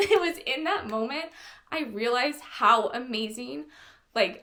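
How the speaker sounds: choked-up voice, breaking with emotion in throat. Recalling people cheering Debbie on at Run Disney, getting choked up. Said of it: "I'm getting choked up again".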